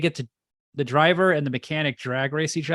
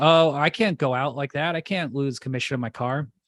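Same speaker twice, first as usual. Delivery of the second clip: fake frightened voice. Retelling a movie scene as the character GTO: imitating scared GTO. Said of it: "He's all scared".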